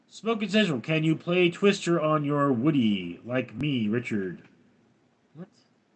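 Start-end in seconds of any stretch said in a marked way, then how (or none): none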